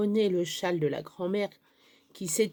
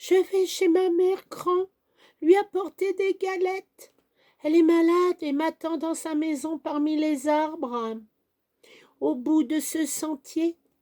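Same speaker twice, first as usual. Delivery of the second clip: high, trembling, quavering, frightened voice; 9 semitones higher, 4 dB louder than usual. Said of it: "d'une voix chevrotante".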